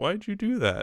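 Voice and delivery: put-on very high-pitched, casually put-out, mildly annoyed tone. Describing a man's delivery, the speaker quotes him with mock mild annoyance. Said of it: "you're talking to your friend who just like you finished all the the Pringles".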